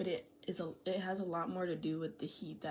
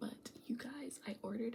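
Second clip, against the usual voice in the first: soft, pitched-up whisper; 5 semitones higher, 5 dB quieter than usual. With mom home, the speaker tells viewers about an order, whispering. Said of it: "I'm whispering because my mom's home".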